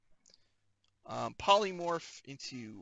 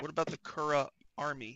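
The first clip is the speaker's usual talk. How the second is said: ordinary talk, nothing marked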